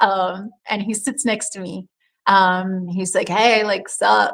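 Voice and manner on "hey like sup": total creaky surfer dude voice. Retelling how a surfer greeted the speaker: imitating a surfer dude. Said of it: "like, super surfer, right?".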